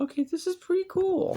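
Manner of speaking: very high, excited squeal.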